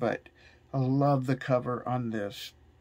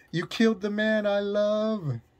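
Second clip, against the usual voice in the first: raised, emphatic voice, word love stretched out; 8 semitones higher than usual. Running through a scripted line addressed to the world, raised voice. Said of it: "I got to raise my voice".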